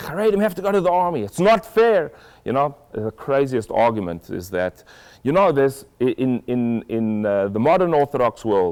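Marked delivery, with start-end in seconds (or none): 0.0-2.1 shrill, very high, screamed rant. Retelling how a man in a shop screamed at the worker: imitating a man screaming. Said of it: "this guy was screaming at him".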